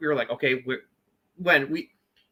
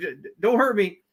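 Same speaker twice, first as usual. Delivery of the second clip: put-on panicked begging, higher; 6 semitones higher than usual. Retelling a wrestler's act in the ring: Ric Flair-style begging. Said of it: "doing, like, a Ric Flair".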